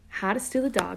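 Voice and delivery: ordinary talk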